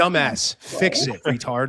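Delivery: put-on blunt, harsh voice. Imitating how Spencer would react to someone getting fat: imitating Spencer being blunt. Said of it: "You'd be like".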